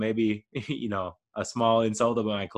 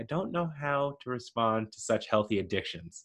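put-on deadpan, quieter; 5 dB quieter than usual. Retelling how a woman responded to someone's habits, mock deadpan. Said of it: "She kind of deadpans at first".

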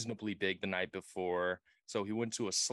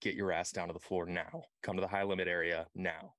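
ordinary talk, nothing marked

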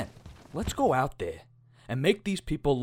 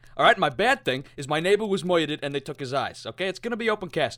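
ordinary delivery

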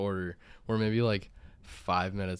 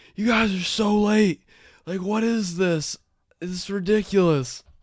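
acted very loud, shrill, angry outburst; 13 semitones higher, 11 dB louder than usual. Telling a food delivery story, the speaker acts out the waiting guy: retelling an angry yell. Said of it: "He starts like yelling like".

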